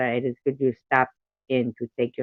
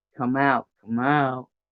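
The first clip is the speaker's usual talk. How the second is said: put-on stoner voice. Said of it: "I have to do stoner sound for, for Lemon".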